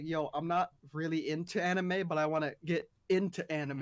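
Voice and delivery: ordinary talk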